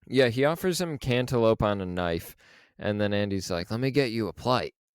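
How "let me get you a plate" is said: put-on speaking in an Australian accent. Retelling a scene where Andy offers Ollie a plate: Andy's Australian accent. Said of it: "in his Australian accent".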